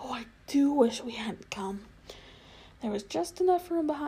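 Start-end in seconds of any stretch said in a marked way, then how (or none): 0.0-1.9 in a whisper. Hiding behind a sofa with another girl, whispered. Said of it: "whispered Lazarine".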